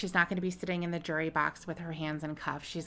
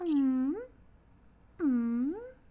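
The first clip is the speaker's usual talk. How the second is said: high, dog-like whine. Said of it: "She's going".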